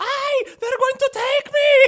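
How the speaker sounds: very high, very loud, shrill screamed cry. Retelling a tv scene after someone jumps out of bushes: imitating someone screaming. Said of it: "she just starts screaming".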